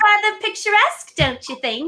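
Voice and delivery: fake British accent, pitched very high. Answering a request to say the line again: put-on english accent. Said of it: "can I get a picturesque from you guys?".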